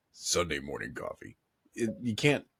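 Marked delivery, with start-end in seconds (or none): 0.2-1.4 very low, deep put-on game-character voice. Showing how the game character sounds: imitating the game character's voice. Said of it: "it's hard to do his voice consistently".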